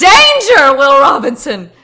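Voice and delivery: acted in-character scream. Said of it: "I start screaming and pointing at the track".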